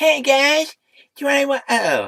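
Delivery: very high, squeaky, swooping, drawn-out cartoon voice. Trying out an impression you haven't done in ages, do a rusty Cartman voice. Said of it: "I need to get back into my Cartman voice".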